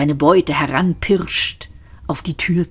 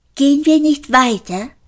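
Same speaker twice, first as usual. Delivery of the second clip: very high, aping, parroting echo; 10 semitones higher, 4 dB louder than usual. Narrator reads Marvin parroting Ford's question back at him, mockingly aping Ford. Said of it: "äffte Marvin ihn nach".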